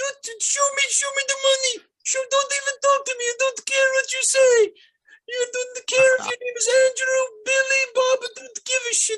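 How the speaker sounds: loud, shrill, high yelling in put-on Ukrainian accent. Imitating how Ukrainian brides sound: Ukrainian accent. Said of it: "You've heard what plenty of the Ukrainian brides sound like".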